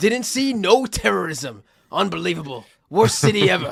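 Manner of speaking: put-on very slow, drawn-out Southern American accent. Retelling a line in a Leonardo DiCaprio plantation owner accent. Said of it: "I was doing, like, a plantation owner accent".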